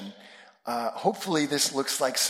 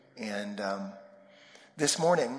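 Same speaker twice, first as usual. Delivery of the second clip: usual speaking voice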